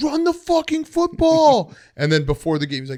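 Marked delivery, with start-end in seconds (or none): 0.0-1.8 shrill, very high screaming. Comparing the memes to a dad in the other room: imitating a screaming dad. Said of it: "he was just screaming".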